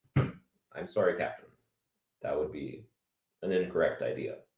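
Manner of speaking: very soft, low, hushed logical alien officer voice. Acting out both sides of a Spock and Kirk exchange, answering the Captain, Spock impression. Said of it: "I'm gonna do my Spock and Kirk impressions".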